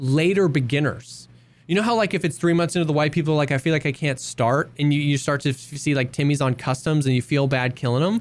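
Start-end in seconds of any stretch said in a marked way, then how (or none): none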